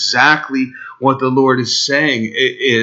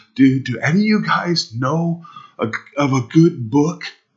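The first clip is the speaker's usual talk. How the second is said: mock quivering, trembling, begging voice; 4 dB quieter than usual. Retelling a fellow pastor begging a group of pastors, imitating a quivering plea. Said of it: "he had a quiver in his voice as he begged".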